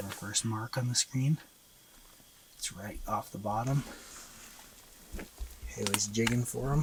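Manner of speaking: hushed, very soft, running whisper. Describing the first mark on the fish screen: whispering. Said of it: "Is that why you're whispering?".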